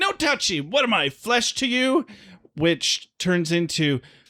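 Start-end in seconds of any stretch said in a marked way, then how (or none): 0.0-2.1 put-on, frantic, panicky, very high-pitched freak-out. Retelling how a character reacts to being touched, imitating someone freaking out. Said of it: "he freaks out and he's like".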